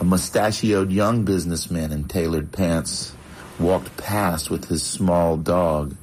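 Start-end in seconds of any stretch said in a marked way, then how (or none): none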